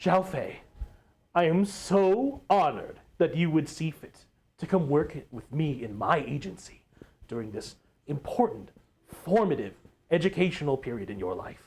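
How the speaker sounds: overjoyed, eager, excited, slow, drawn-out voice. Voicing a shaking character greeting a new arrival at his agency: excited. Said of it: "you think he's, like, super excited".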